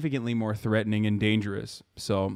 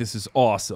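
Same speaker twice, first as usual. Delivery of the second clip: put-on overexcited voice. Mocking how thrilled he seems: imitating Keemstar's excitement. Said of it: "this is so exciting for him".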